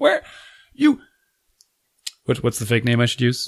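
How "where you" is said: put-on panicked scream, higher pitch. Retelling a woman panic calling on a walkie-talkie: imitating someone screaming. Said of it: "she's screaming into the walkie-talkie".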